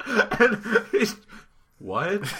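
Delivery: laughing.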